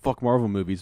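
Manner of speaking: ordinary talk, nothing marked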